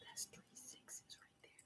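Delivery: breathy, hushed whisper, very quiet. Pointing out that three sixes came up: whispering. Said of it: "Even as I'm whispering that".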